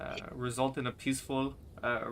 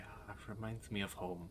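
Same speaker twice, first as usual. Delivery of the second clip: very hushed, low, muttered half-whisper; 4 semitones lower, 10 dB quieter than usual. Voicing a character reacting to a crossbow bolt: half-whisper under his breath. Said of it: "you can hear him whisper, like, kinda under his breath".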